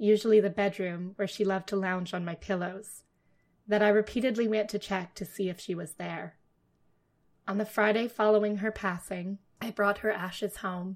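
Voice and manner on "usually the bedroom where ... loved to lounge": ordinary delivery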